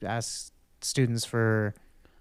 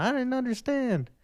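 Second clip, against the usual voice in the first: put-on very high, shrill, whiny childish scream; 12 semitones higher than usual. Joking that listeners needn't feel lost: mock child screaming. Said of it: "like a child screaming at the thing going".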